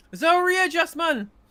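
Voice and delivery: put-on Geordie accent. Picturing a politician saying a line: Geordie accent. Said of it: "Imagine saying it in a Geordie accent".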